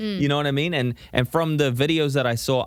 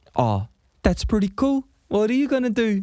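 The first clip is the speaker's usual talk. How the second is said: put-on high-pitched New Zealand accent; 8 semitones higher than usual. Showing a listener the voice that the performer chose for the character, Korg voice. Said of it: "But he chose to do like".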